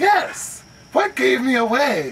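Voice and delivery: very high, swooping, friendly bard character voice. Asked whether he is a bard, the healer replies, friendly human bard voice. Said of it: "[name] at your service, the greatest healer in the country. / Very friendly human will kind of go, / And he shakes your hand just like that. / So you're a bard. Yes".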